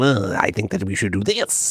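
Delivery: put-on drunk voice. Comparing Houdini to Rasputin controlling a monarchy from the shadows, imitating a drunk Rasputin. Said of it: "being stinky and drunk and going".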